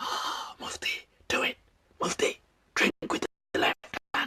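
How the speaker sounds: very hushed, whispered devil voice. Explaining why he does it, the speaker voices Lucifer's devil voice talking to him. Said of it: "I hear the devil's voices".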